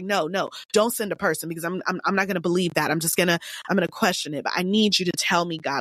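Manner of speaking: put-on panicked, frantic, freaking-out voice. Retelling pleading with god while panicking: retelling own past panicked prayer. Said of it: "I was freaking out".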